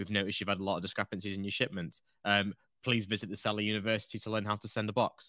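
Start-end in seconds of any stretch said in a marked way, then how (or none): none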